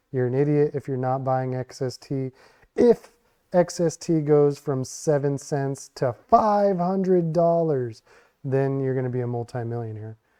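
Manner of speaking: plain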